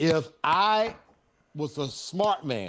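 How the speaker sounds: very slow, heavily sarcastic drawl. Explaining a missed chance to another speaker: very sarcastic. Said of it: "being very sarcastic".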